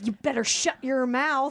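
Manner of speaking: imitated Southern accent. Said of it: "Southern accent".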